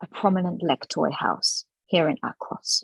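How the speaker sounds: barely audible, very quiet whisper. Game master voicing a character who whispers to you in Undercommon, very quiet whisper. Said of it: "very, very quietly, he whispers to you".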